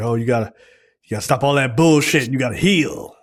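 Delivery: put-on harsh, scolding tone. Retelling how the mom talks to her daughter who got shot: imitating the mom being hard. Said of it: "Why are you being hard on me?".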